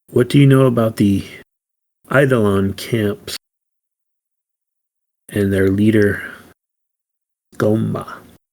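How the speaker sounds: hushed, secretive, conspiratorial murmur, quiet. A player's character leans forward to question a seated man, quiet and conspiratorial. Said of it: "very quietly and conspiratorially say".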